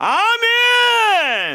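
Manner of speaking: very high, booming, full-volume shout. Showing how big their voice is without a mic, shouting "아멘". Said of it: "제가 아멘 해볼까요? 제 목소리 얼마나 큰가?".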